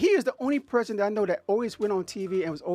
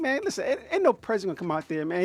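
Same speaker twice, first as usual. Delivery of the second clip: normal talking voice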